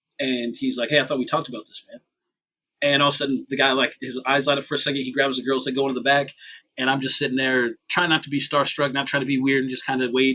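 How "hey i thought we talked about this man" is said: really upset, put-out, complaining tone. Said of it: "Prince seemed real upset".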